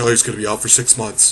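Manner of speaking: ordinary talk, nothing marked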